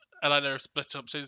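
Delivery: plain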